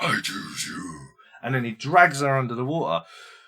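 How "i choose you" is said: deep, low, sinking demonic voice. Recounting a story, the speaker voices the figure who drags a girl under: low deep demonic voice. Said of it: "getting lower and deeper and then it turns into a demonic".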